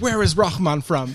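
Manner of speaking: put-on flustered voice. Retelling rushing up separated from the group: imitating own flustered asking.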